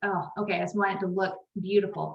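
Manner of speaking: ordinary talk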